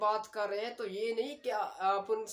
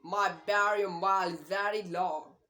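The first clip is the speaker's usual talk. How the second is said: put-on British accent, T said as D; 4 dB louder than usual. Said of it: "उसने टी की जगह पे डी का साउंड दिया".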